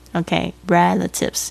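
"relatives" said slowly, stressed on the first syllable.

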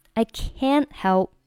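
"can't" heavily and strongly stressed. Explaining stress used to show negation: stress on can't. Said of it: "我们把这个单词进行了重读表示否定。".

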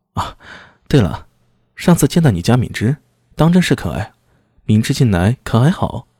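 ordinary delivery

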